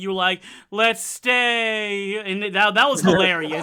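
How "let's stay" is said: mock deflated, resigned, defeated, drawn-out delivery. Retelling how the other speaker said a replacement word: imitating a defeated tone. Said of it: "you sounded so defeated".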